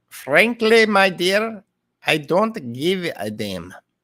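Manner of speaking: very slow, high Russian accent, drifting from German. Trying to say a line in German, an accent that comes out Russian. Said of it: "that's more Russian".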